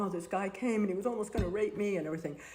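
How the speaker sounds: tearful, weeping crying voice. Retelling a phone call to a partner after a frightening encounter: imitating own past crying. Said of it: "crying on the phone".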